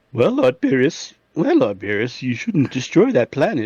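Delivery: slow anime character voice with swooping pitch. Trying an impression when the other speaker asks for it: Whis voice. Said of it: "the voice impersonation then for Whis".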